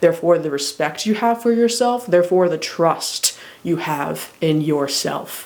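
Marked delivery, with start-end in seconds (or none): 2.1-5.5 "trust" stressed, slow delivery. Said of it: "Emphasis on trust".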